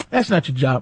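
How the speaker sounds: play-acted cocky, superior, arrogant, entitled dismissiveness. Retelling a reply to an airport worker: imitating own arrogant tone. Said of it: "I'm arrogant".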